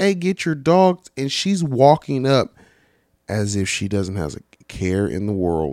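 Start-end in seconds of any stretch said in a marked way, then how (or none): 0.0-1.1 acted, high-pitched shouting. Telling of a guy yelling at a lady about her dogs: retelling a yell. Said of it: "he's yelling at the lady like".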